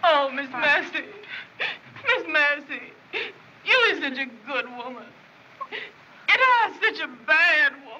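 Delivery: speaking while weeping, crying. A woman speaking to another woman, crying.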